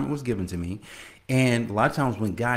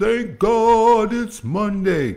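very slow, stretched, loud, drawn-out preacher voice; 10 semitones higher, 7 dB louder than usual. Podcast host opening his Monday show, doing ET, the hip hop preacher's voice. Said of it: "like in ET, the hip hop preacher's voice".

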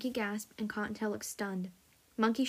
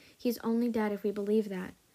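plain reading voice

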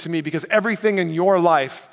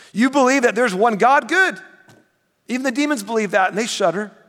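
put-on, pitched-up, mock-approving sarcastic tone; 5 semitones higher than usual. Reading a verse aloud as if its writer is being sarcastic: put-on sarcastic tone. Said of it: "put on the sarcasm hat".

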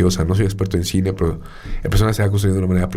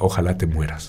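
mock muttering through teeth, much lower; 3 semitones lower, 4 dB quieter than usual. Retelling a story of a man in a café each morning: retelling a mutter through teeth. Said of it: "entre dientes decía".

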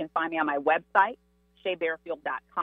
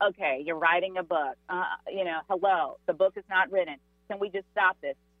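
usual speaking voice

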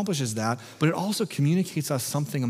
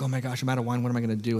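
put-on head waiter voice, frantic, rushed, panicky. Retelling the story of a head waiter who runs out of wine: imitating a frantic head waiter. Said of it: "he's, like, frantic".

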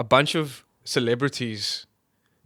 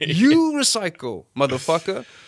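worked-up, hot-headed, heated outburst, pitched up; 5 semitones higher, 4 dB louder than usual. Ranting about celebrities lecturing audiences: getting worked up. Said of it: "I can tell I'm getting hot".

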